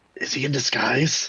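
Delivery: secretive, hushed half-whisper, stage whisper. Telling the others what they would bluntly ask, in a mock half-whisper. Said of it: "Like I'm whispering".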